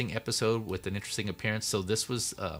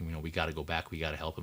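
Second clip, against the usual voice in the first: usual speaking voice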